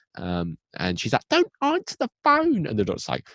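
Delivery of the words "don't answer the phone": put-on very high-pitched voice with a slight British accent. Retelling a scene where Nancy warns the Doctor: Nancy's British voice. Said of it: "she's a bit British, and she talks like this".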